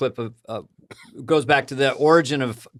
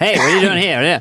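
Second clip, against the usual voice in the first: put-on loud, forties old-movie gangster voice; 4 semitones higher, 5 dB louder than usual. Recalling friends' back-and-forth bits: 1940s gangster voice. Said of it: "gangster forties voices".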